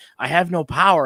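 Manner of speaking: put-on high scream. Retelling what was heard on the radio: imitating Pato screaming. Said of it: "when he's screaming".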